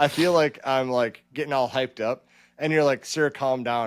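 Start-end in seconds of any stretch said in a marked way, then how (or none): none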